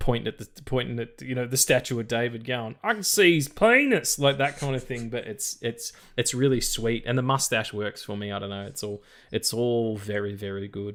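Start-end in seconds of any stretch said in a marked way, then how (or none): 2.8-4.2 loud, drawn-out American tourist voice. Describing an annoying American tourist in a museum, loud American tourist voice. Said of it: "in a really loud in a museum".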